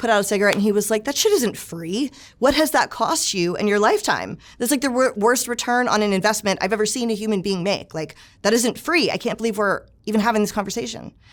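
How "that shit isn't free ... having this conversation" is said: acted, angry, scolding, lecturing rant. Retelling how the house manager scolded the speaker: imitating angry Steve. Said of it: "he got so mad at me".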